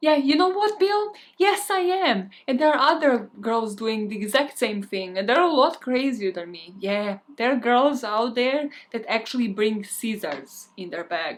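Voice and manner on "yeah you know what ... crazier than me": mock, fully angry, heated tone. Retelling a woman's reply after her cover is blown, imitating her angry reply. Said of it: "now completely angry".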